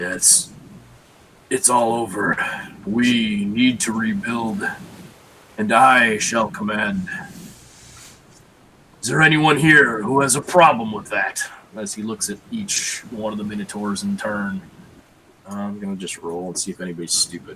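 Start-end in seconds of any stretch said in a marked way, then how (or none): 0.0-11.4 deep rumbling whispered voice. Game master voices a character addressing the minotaurs; low rumbling whisper. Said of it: "in kind of a low rumbling whisper".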